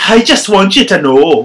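put-on Irish accent, high and very loud. Trying out a script line again for a partner, in an irish accent. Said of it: "That's Irish again".

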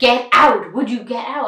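loud, drawn-out shout. Retelling how a teacher ordered a student out: imitating a teacher shouting. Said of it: "she's still like".

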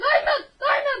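very high, loud, excited shouting.

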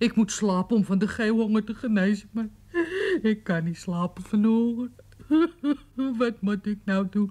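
speaking while crying, tearful and sobbing. A hungry character begs another for more food, crying. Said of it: "niet huilen".

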